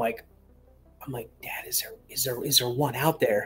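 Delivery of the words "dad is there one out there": hushed whisper, much quieter, slower. Retelling asking their dad a question, speaker whispers. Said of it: "and I'm whispering".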